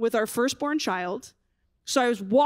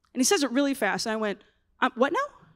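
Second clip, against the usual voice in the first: plain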